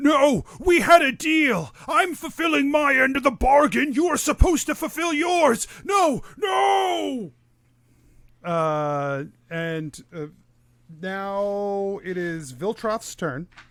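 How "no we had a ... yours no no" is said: very high, frantic, desperate pleading scream. Voicing a character who screams that they had a deal: screaming. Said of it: "you hear him scream".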